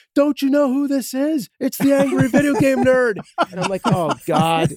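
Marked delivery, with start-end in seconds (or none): 0.2-3.2 very high shouted yell. Speaker recalling a man yelling back at a honking driver, retelling a man's yell. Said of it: "he yells back at the other person".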